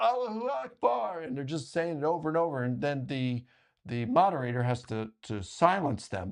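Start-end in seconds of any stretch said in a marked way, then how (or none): 0.0-1.2 high, yelled voice. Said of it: "all these Muslims start yelling".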